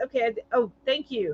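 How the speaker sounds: ordinary talk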